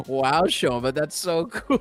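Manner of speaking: mock sarcastic tone. Retelling what he said to Shoma, imitating a sarcastic remark. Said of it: "he was being sarcastic".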